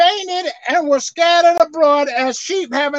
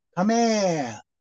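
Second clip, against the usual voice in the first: calm, still, very low, quiet voice; 7 semitones lower, 7 dB quieter than usual. Retelling how the shepherd called his scattered sheep, retelling a still, quiet call. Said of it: "he simply said with a still voice".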